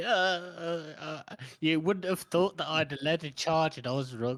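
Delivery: mock whiny voice with drawn-out uhs. Discussing a book, imitating the character Hedges: whiny Hedges voice. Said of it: "It's been a whiny little shit".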